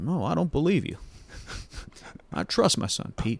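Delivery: high-pitched cartoon voice. Speaker acts out a movie scene where Goofy answers Pete, in a Goofy voice. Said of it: "Bill Farmer as Goofy".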